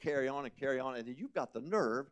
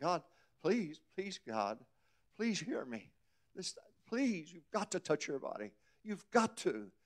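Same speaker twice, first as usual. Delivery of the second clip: crying, tearful, pleading, begging, with swooping pitch; 4 semitones higher than usual. A speaker retells praying to God in a parking lot, retelling a crying prayer. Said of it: "I cried like a baby".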